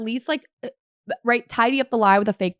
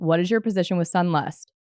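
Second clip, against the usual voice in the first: ordinary talk, nothing marked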